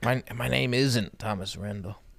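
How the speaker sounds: mock dying man voice. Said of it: "This is a deathbed voice".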